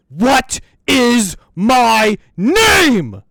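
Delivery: very high, very loud, slow, drawn-out full-lung scream. Narrating a game scene, the spirit yells at the group, screaming at the top of lungs. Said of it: "screaming at the top of his lungs".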